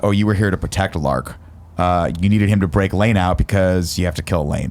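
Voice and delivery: ordinary talk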